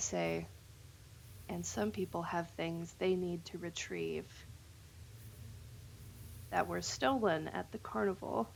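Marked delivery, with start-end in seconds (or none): 1.5-8.5 soft, hushed, secretive whisper. Leaning in close to another player in character: whispering. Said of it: "I'm gonna whisper".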